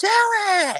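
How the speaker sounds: acted-out piercing, very high-pitched scream. Retelling how she kept screaming at you to get out, imitating someone screaming. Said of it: "she's like literally screaming at me".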